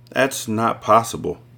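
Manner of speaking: ordinary delivery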